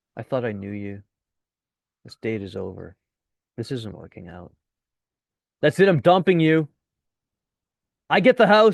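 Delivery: dead straight, flat delivery with no audible reaction. Showing a reply when a date disagrees with you, Dumb and Dumber deadpan. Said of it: "that sort of Dumb and Dumber deadpan thing".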